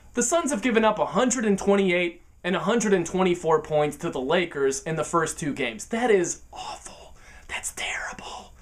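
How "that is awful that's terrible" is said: breathy, confiding, slow, hushed whisper. Speaker discussing the Suns' defense against the Lakers: whispering. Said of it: "I'm whispering".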